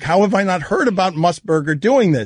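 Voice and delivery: ordinary talk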